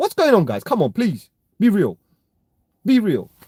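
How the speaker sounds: slightly annoyed, a little angry, with swooping pitch. Addressing the guys listening about people forgetting, a little angry. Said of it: "Sorry, I'm a little bit angry".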